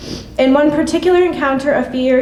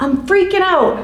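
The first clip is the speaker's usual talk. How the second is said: high, slow, dramatic freaked-out exclamation. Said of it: "he would clutch his head dramatically and exclaim".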